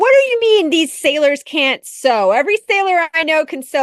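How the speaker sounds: heavy sarcasm. Retelling a post written during a first episode: imitating own sarcastic tone. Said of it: "very sarcastic about it".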